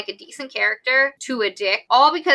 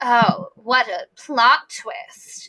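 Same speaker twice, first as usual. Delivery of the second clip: slow, weird fancy man voice. Mocking a villain's line from the book: weird fancy man voice. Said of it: "this weird fancy man voice".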